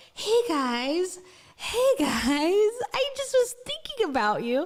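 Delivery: put-on very slow, high, babyish talking-to-an-infant voice. Imitating how she talks in close-up content, in a babyish high voice. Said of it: "the voice gets really babyish and really high".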